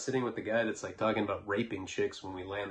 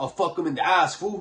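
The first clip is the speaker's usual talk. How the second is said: high, loud screaming, yelled out; 8 semitones higher, 7 dB louder than usual. Recalling a man nearby yelling crazy things, retelling his screaming.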